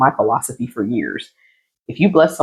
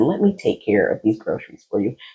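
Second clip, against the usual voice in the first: hushed, gentle whisper; 4 dB quieter than usual. Retelling speaking into an older lady's ear at a store: retelling a whisper. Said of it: "I whispered in her ear".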